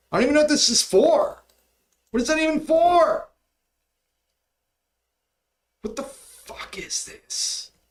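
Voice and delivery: very high mad ranting. Speaker complaining about Apple changing what they type, mad. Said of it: "I'm so mad right now".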